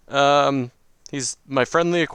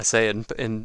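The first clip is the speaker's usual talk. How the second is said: ordinary talk, nothing marked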